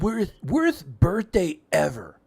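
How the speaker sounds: animated cartoon voice, pitch swooping on each word. Quoting a cartoon line about birthdays: Comic Book Guy voice. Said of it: "that's not bad".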